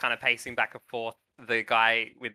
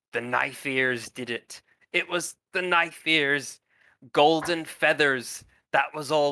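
slow, drawn-out stage whisper, pulled in close; 3 semitones higher than usual. A game master voices a wounded man pulling a player close, half-whispering. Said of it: "he whispers".

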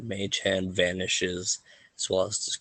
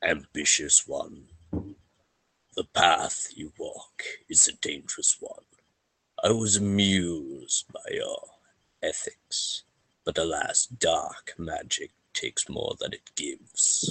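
low, deep, mysterious voice; 3 semitones lower than usual. A voice once heard in a dream gives a piece of advice: deep voice. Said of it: "hearing this deep tone a voice is heard".

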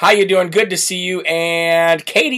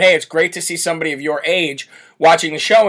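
ordinary talk

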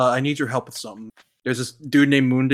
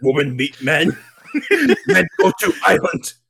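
broken, swooping, dim, caveman-style gorilla speech; 4 semitones higher than usual. Friends recap a movie plot, one talking like a gorilla. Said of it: "Just talking like a gorilla".

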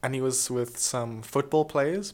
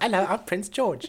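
high, polite character voice; 8 semitones higher than usual. Imitating how Prince George might sound: imitating Prince George's voice. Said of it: "I think that's how he sounds".

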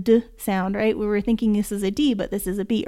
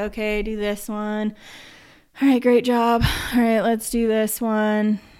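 bored, flat, unenthused teacher voice. Demonstrating how a relaxed teacher sounds during a lesson, bored voice. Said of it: "Like I just sound bored".

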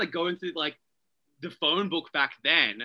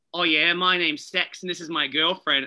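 really thick put-on Australian accent; 4 dB louder than usual. Retelling what a woman at an advanced class said, in a really thick aussie accent. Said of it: "really thick Aussie accent".

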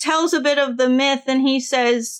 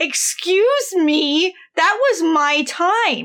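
put-on upset voice, higher; 3 semitones higher than usual. Retelling how the seer Amphiaraus reacts to his death being stopped: imitating upset Amphiaraus. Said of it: "he's actually upset".

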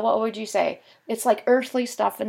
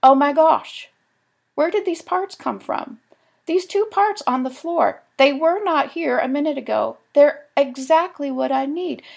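play-acted high, excited, amazed exclaiming; 5 semitones higher, 4 dB louder than usual. Speaker quotes her husband's reaction, imitating his excitement. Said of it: "He's all excited".

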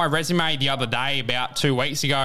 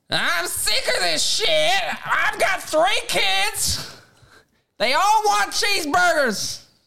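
put-on, very high, angry Australian woman's voice. Challenged to put a voice on right now: angry Australian woman voice. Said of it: "as like a fat, like a big, obese, angry Australian woman".

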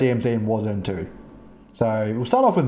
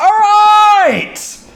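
very high, very loud, aggressive, shrill, booming forceful yell; 13 dB louder than usual. Welcoming everybody back to the show: aggressive loud welcome. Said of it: "That's aggressive".

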